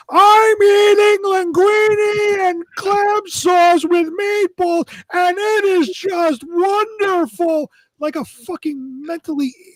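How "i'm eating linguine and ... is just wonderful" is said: high, very slow, drawn-out, top-of-the-lungs scream. Retelling how a radio reviewer screamed his restaurant review: imitating someone screaming. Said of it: "literally scream at the top of his lungs".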